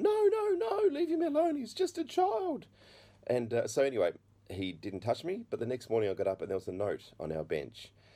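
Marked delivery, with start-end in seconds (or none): 0.0-2.7 very high-pitched, loud yell. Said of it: "my mum's yelling out".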